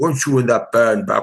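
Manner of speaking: low, deep man's voice. Retelling what a manager said on first meeting: imitating John Tovar's deep voice. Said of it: "he had a deep voice of".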